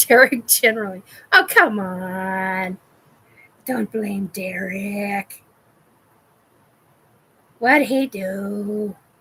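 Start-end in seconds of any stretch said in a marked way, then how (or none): 1.3-8.9 playful, slow put-on voice, stretched and drawn out. After joking about blaming Derek, speaker answers himself in a put-on voice. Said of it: "I hate it when I do that voice".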